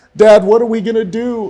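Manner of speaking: very high sobbing cry. A father retells what his son screamed to him; retelling a son's crying scream. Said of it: "in a crying scream".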